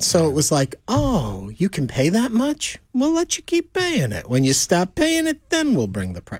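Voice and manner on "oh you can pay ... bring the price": subtle gangster voice, high and swooping. On a call-in show, acting out what the stores seem to say: gangster voice. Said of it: "You like how it became like a gangster kind of voice?".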